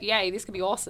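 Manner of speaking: ordinary talk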